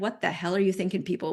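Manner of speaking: ordinary talk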